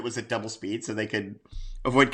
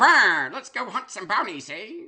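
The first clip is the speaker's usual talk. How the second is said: bad old-time New Jersey gangster accent, very high pitch; 10 semitones higher, 4 dB louder than usual. Imitating an actor's bad accent in a movie: imitating The Miz's New Jersey accent. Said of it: "The Miz uses a New Jersey accent".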